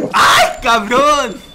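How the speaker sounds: high, loud, slow shocked cry.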